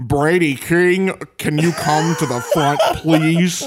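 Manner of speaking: put-on American accent. Calling Brady King to the front, in Benedict Cumberbatch's American accent. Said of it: "In Benedict Cumberbatch's American accent".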